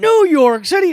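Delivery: scandalised, appalled outrage, pitched very high. Describing cowboys in a salsa commercial, with mock-appalled outrage. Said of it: "like how dare you get salsa from there?".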